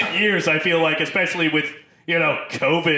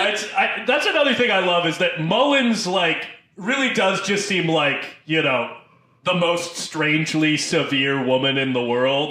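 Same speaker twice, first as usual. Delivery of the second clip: ordinary talk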